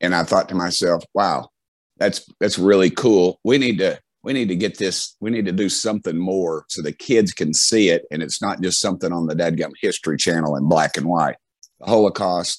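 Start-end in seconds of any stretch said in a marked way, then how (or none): none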